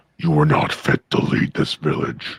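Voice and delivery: fantasy orc chieftain voice. Asked to read the summoned orc chieftain's line aloud, in orc voice. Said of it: "Read it in read it in orc voice".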